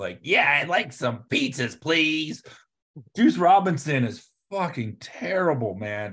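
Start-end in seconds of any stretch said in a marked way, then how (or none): 0.2-2.4 put-on child putting on a grown-up voice. Mocking the way Juice Robinson sounds: Juice Robinson as kid playing adult. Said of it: "like a kid on the phone trying to be an adult".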